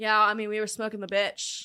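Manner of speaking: casual, nonchalant, way-too-cool bragging tone. Retelling what she told the officers, imitating someone acting cool. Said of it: "she says it like it's so cool".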